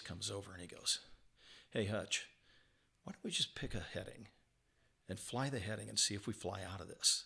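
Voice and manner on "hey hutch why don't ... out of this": mock unruffled, even-keeled, very calm, easy delivery. Retelling what Ernie said while they were stuck in the clouds: retelling a very calm voice. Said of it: "in this very calm voice".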